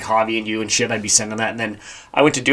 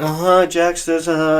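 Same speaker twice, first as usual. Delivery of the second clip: slow, absent, distracted uh-huhs, pitched up; 6 semitones higher than usual. Imitating someone scrolling Instagram while answering: imitating distracted half-listening. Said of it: "you're looking at your Instagram account".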